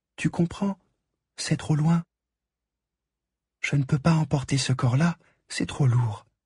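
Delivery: clear, thin, light, high-pitched voice. [name] imitates the Little Prince on his last voyage, in a clear, thin voice. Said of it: "[name] prend une voix claire et fluette".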